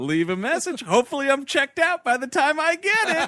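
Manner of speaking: very high, smug, happy-go-lucky, smart-ass cheery tone. Retelling a recorded answering machine message: imitating a smart-ass happy-go-lucky message. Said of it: "this smart-ass thing where he's like".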